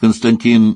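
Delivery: ordinary delivery, nothing marked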